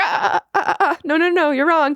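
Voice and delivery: very high, cutting-in voice talking over another. Retelling how a judge cut off another judge: imitating Carrie Ann cutting Derek off. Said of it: "And Carrie Ann was like".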